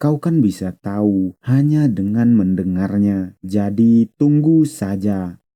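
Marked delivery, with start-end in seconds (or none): none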